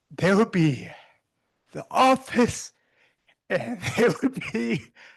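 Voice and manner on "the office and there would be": high, slow laughing through tears. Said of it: "I don't know why I'm laughing and crying".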